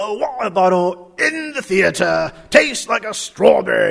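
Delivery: British accent, laid on for show. Arguing that listeners are suckers for a British accent, the speaker uses a British accent. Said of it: "You are just a sucker for a British accent".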